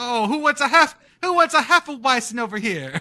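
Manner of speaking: bad fake New Jersey accent. Riffing with the others in a bit, doing a bad New Jersey accent. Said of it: "your attempt at a New Jersey accent".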